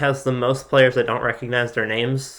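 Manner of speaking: ordinary delivery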